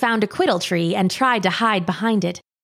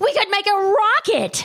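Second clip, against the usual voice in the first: very high, raised, louder high-pitched voice; 11 semitones higher than usual. Reading a story, one child answers the other's whispers: louder voice. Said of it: "Kayes said in a louder voice".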